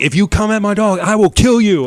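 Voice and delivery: put-on loud, high, crazed, unhinged hype-man voice. Retelling a sketch's crazed hype man: imitating a crazed threat. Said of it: "He was going psycho".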